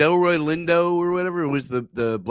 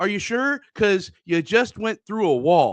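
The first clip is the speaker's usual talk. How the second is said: put-on sarcastic movie-cop voice, higher pitch; 6 semitones higher than usual. Retelling a movie scene where a cop checks on a driver, imitating Timothy Olyphant's sarcastic line delivery. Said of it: "the way he delivered this line".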